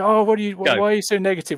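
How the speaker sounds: very high, shrill, scolding outburst. Interjecting as Chris to answer worries about the team: imitating Chris. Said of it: "interject as Chris and say".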